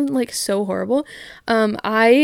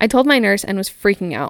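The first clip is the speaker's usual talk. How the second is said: normal talking voice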